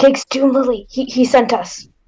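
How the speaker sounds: whispered delivery. Leaning in close to the wizard, saying who sent them: whispering. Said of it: "I lean in close and I whisper".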